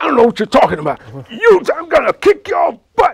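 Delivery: very high, very loud angry yell. Recounting a huge guy yelling at the speaker over a radio, retelling a yelled threat. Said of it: "He says".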